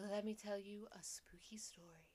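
nice, soft, put-on lady radio voice. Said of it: "doing this fake, like, woman's voice".

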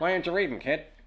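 put-on loud, old-timey 1920s film twang. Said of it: "With the twang, the twang".

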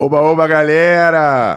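hearty, loud shouted yell with galera drawn out. Greeting the audience at the start, yelling a greeting. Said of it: "Eu tô gritando, né, cara?".

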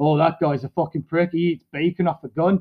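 ordinary talk, nothing marked

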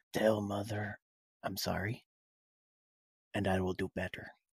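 very quiet, hushed half-whisper, close and soft. A character hugs Father quickly and speaks to him, half-whispering. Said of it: "I'm going to whisper to him".

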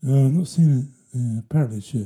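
put-on drowsy sleep-talk mumble. Retelling words said while fast asleep: imitating own sleep-talking. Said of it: "fast asleep and just went".

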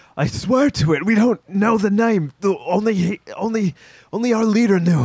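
very high-pitched words hacked out through coughing. Voicing a beaten man who insists he doesn't know the name: coughing out the words. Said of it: "he coughs out".

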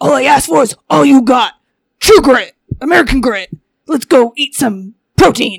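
loud, throat-straining voice pushed from the throat. Retelling an old bit, doing a John Cena impression. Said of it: "I did John Cena before".

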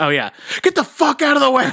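high, laughing, mock-angry yell.

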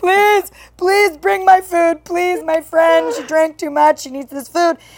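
put-on tearful, high, crying pleading voice. Retelling a phone call to a delivery driver: imitating her own crying plea. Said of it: "crying on the phone".

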